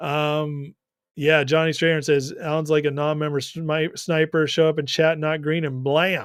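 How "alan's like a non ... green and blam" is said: normal talking voice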